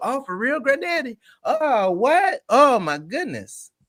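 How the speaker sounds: high, put-on amazed and impressed gushing. Acting out reacting to a grandfather's repeated stories: mock amazement. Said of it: "We go".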